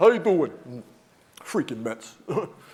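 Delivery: put-on impenetrable, thick, laid-on New York accent. Describing calling someone up and how he answers: Tommy's impenetrable New York accent. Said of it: "he has an impenetrable New York accent".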